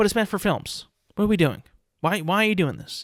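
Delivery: fed-up, pissed-off, angry ranting. Ranting that the franchise is meant for films: sounding pissed off. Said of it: "If I sound pissed off".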